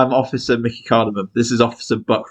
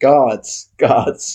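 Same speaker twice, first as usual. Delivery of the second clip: loud hollering shout. During a prison escape in the game, a player calls for the guards, yelling. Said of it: "Can I yell before we leave?".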